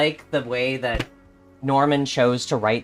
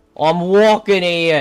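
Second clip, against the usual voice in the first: clumsy, loud attempted Boston accent; 4 semitones higher, 6 dB louder than usual. Speaker trying to read a line aloud, attempted boston accent. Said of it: "I can't read it in a Boston accent".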